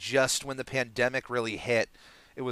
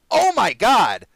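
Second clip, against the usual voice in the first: very high, very loud excited shout; 10 semitones higher, 12 dB louder than usual. Recalling watching a show in the bathroom, re-enacting an excited yell. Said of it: "and I just yelled".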